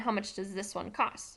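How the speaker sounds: plain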